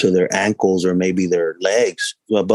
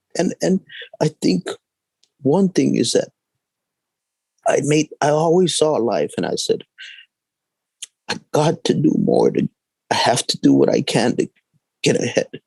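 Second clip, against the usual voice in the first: tearful crying, higher pitch; 7 semitones higher than usual. A speaker recalls sleeping on a kitchen floor, crying.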